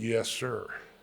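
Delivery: slow, stretched-out Southern Mississippi drawl. Retelling a phone call with Ray Guy: slow Southern Mississippi drawl. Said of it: "with that slow Southern Mississippi drawl".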